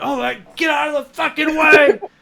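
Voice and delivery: very loud, very high, shrill, impatient frantic yell. Imagining an airport scene, the speaker acts out Reacher, mock-yelling. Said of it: "make this scene the most intense thing".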